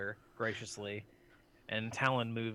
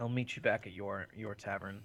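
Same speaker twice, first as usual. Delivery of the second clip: whispered speech. Game master voices a character answering the players' message: whispering. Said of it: "he whispers back".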